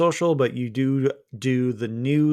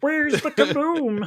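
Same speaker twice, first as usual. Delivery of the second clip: very high-pitched cartoon alien voice; 13 semitones higher than usual. Trying out voices for the episode, Marvin the Martian voice. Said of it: "I can do a little bit of a Marvin Martian".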